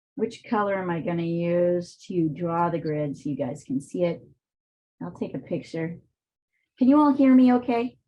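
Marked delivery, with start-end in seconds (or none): 6.8-7.9 loud, high, fast, projecting shout. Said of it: "all that shouting was unnecessary".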